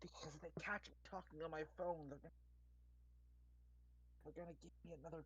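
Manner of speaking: rushed, fast, hushed, barely audible whisper. Voicing Marsh calling over the phone: whispering as Marsh. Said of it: "Why are you whispering?".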